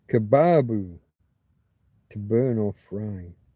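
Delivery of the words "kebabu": kebabu with stress on middle syllable bab. Explaining the older forms of the word kebab: stress on middle syllable of kebabu. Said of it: "Got to put that stress on that middle syllable".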